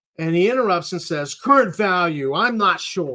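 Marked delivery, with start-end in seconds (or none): 1.4-3.2 testy, irritable, raised voice. Retelling how a man interrupted the trustee's questioning, doing a mock-testy reply. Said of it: "He's getting testy here".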